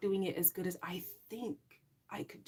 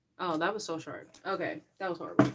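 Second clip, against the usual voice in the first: normal talking voice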